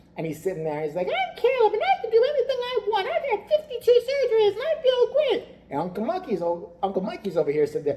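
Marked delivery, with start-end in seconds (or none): 1.1-5.5 put-on very high little child voice. Retelling what a kid in a commercial said: imitating Caleb's voice. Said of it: "but he talks like this".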